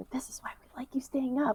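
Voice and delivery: soft whispered aside. Voicing a character who nudges an ally after a fight: whispering in character. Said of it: "kind of nudge her and whisper".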